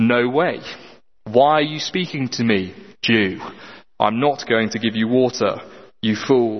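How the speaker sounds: mock annoyed, hostile tone. Acting out the Samaritan woman refusing Jesus water: annoyed, hostile refusal. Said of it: "It is a racist motivated".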